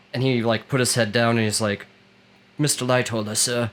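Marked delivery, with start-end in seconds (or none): 2.5-3.7 put-on Cockney accent. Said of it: "he spoke with, like, this Cockney accent".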